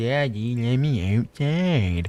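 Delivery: slow, whining, crying puppy voice, begging. Voicing a dog that cries at the door to go outside: imitating a crying dog. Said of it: "he's crying at me".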